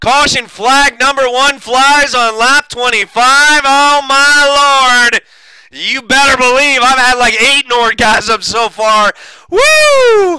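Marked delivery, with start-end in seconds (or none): 3.6-10.4 put-on slow drawl, then letting loose a woo. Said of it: "That was my best Ric Flair impression".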